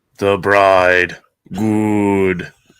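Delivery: dramatic put-on monster voice. Among co-hosts, the speaker tries a bit of voice acting: dramatic Karloff voice. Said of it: "I'm gonna do a little a little dramatic voice acting here".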